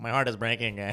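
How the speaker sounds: mocking, mimicking put-on voice. Mocking another speaker's words back at them in that speaker's voice. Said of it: "all I heard was".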